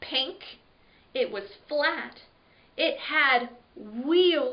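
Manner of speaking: ordinary delivery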